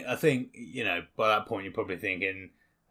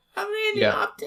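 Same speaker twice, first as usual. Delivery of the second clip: put-on funny child voice, higher; 4 dB louder than usual. Imagining a tiny character speaking in a comical kid's voice. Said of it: "a comical kid's voice come out of him".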